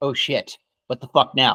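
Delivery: normal talking voice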